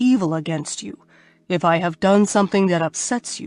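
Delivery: ordinary delivery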